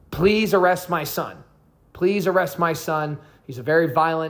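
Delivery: mock desperate pleading voice. Retelling a mother begging firefighters to arrest her son: imitating a pleading mother. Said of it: "I'm sure she's pleading with them".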